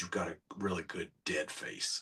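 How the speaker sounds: very quiet, hushed, murmured villain voice. Retelling what he said after leaning over during the shoot, in Vecna voice. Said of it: "with that voice".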